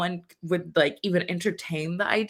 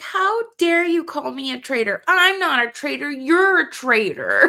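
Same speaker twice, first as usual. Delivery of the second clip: petulant, whiny, pitched-up whine; 8 semitones higher, 4 dB louder than usual. Retelling how Dylan accused someone of being a traitor: imitating Dylan whining. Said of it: "He's so whiny".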